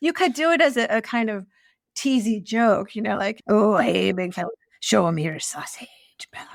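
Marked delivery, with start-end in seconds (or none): 3.5-6.5 bad put-on Scottish accent, closer to pirate voice. Suggesting a teasing joke line to the other speaker, put-on Scottish accent. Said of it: "that's my Scottish accent".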